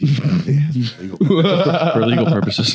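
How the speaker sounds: very slow, drawn-out mock formal reading, every word stretched.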